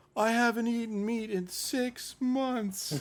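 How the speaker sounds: very high sobbing speech, words broken by sobs. Speaker retells what a crying woman said when offered pork; imitating someone sobbing. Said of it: "in the middle of her sobbing".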